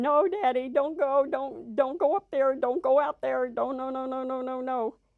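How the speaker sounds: put-on play-acted panicked, terrified little-kid pleading cry. Held in dad's arms, begging him not to go, reenacting own terrified screaming. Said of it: "and I'm screaming".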